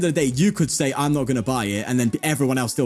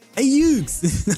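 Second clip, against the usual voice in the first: put-on New York accent, higher, louder; 11 semitones higher, 3 dB louder than usual. Speaker talking about Pokemon shows how they spoke in Joey's New York accent. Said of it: "I spoke with Joey's accent".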